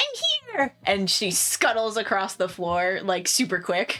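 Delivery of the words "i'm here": very excited character voice. Voicing a character popping out of a sleeve: very excited character voice. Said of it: "is just very excited, like".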